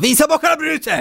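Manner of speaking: hurried, high-pitched yell. Retelling how he ran into the kitchen and yelled at the smart speaker, retelling an eager shout. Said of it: "och så skrek han då".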